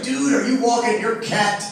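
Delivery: plain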